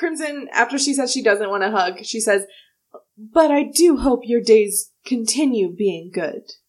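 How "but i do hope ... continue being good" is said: put-on ominous tone, slower. Retelling what she said after turning down a hug, mock-ominous. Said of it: "She sounds a little ominous".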